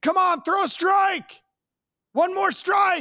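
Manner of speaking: put-on, sarcastic, very high-pitched yelling. Retelling what parents yell at a pitcher mid-game: imitating parents yelling. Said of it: "my favorite thing for parents to yell".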